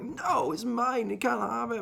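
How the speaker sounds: put-on very high, soft, weepy crying child voice. Retelling being five or six as a friend borrowed a film, imitating a crying child. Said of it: "And I'm sitting there like literally crying".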